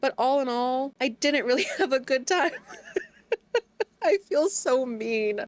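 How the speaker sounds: high, laughing while talking. Admitting a harsh opinion of a book: laughing while talking. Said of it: "I'm sorry I'm laughing".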